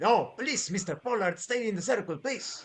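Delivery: cross, irritated, angry tone. Narrator voicing Dr. Jaeger's reply to Mr. Pollard, angry Dr. Jaeger reply. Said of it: "Dr. Jaeger replies angrily".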